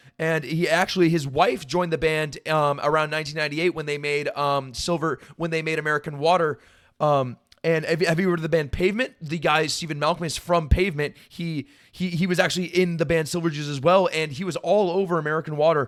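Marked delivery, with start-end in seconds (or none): none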